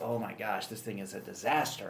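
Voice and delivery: normal talking voice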